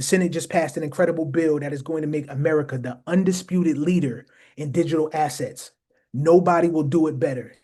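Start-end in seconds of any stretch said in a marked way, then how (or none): none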